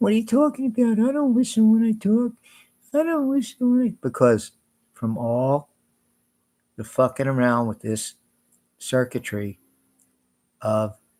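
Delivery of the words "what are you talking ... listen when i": very high, pinched, squeaky talking voice. Imitating how Troy talks: imitating Troy's way of talking. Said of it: "Troy speaks like this".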